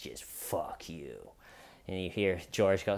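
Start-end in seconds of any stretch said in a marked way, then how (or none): 0.0-1.2 nasty, mean, very quiet whisper. Retelling how a woman answered a man begging from inside, imitating a mean voice. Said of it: "in a just a mean voice".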